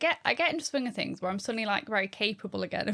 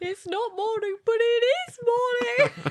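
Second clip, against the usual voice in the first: put-on crying child voice, higher and louder; 14 semitones higher, 5 dB louder than usual. Retelling how a child came into the room crying: imitating Lillian crying. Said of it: "the room crying".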